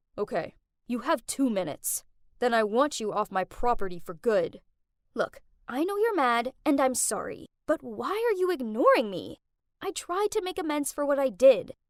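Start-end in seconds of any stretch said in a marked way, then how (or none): 0.2-4.6 low, gruff, grudging speaking voice. Reading a story aloud, voicing someone finally opening the door: gruff tone. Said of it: "in a gruff tone said".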